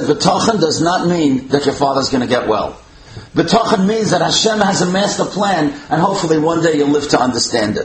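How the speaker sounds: plain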